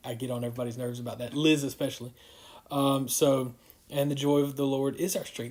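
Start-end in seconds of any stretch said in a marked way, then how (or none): none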